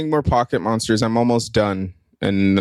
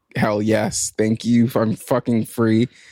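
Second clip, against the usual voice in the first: usual speaking voice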